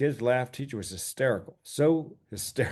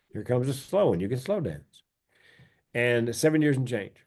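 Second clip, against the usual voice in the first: ordinary delivery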